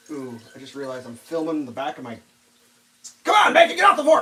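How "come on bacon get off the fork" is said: very high, shrill, loud yell. Cooking bacon while streaming, bacon stuck on the fork: yelling at the bacon. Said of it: "I'm yelling at Bacon".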